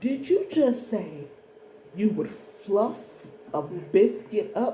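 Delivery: slow, put-on patronizing, talking-down tone. Retelling how someone questioned the speaker: imitating a slow condescending tone. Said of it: "in a very slow, condescending manner".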